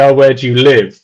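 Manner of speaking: ordinary talk, nothing marked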